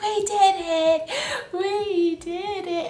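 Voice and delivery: put-on very high, very slow, drawn-out crying voice. Retelling stepping into the new place for the first time: retelling own tearful words. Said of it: "and I started crying".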